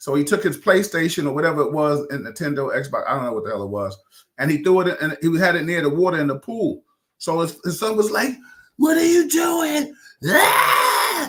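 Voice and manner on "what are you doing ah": very high, loud, very slow, drawn-out shriek. Retelling a father and son arguing, voicing the son: imitating someone screaming. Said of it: "He was screaming".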